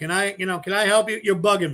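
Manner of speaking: ordinary delivery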